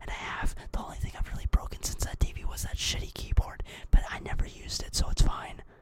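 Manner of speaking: hushed whisper. Podcast host speaking to listeners, whispering. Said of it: "I'm done whispering".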